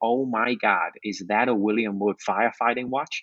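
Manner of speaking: put-on American accent. Retelling what a Home Depot counter guy said about a watch: imitated American accent. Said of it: "That's my best impression of a American accent".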